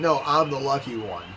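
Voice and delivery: ordinary delivery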